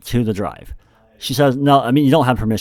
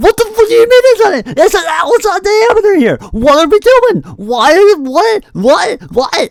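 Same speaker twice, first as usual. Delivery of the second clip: acted shrill, very high, loud, frantic freak-out; 8 dB louder than usual. Recounting their reaction to the answer about the diameter, acting out freaking out. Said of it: "I'm freaking out".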